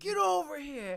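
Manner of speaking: very loud, high fighting-game-style yell at full blast. Doing the fight-segment sound bite from Mortal Kombat: Mortal Kombat "get over here" voice. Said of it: "Like from Mortal, you ever play Mortal Kombat?".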